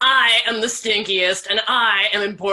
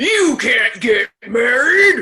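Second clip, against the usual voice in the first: spooky, frightening voice; 4 dB louder than usual. A storyteller voices the stink bug calling out, in a scary voice. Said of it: "Said a scary voice".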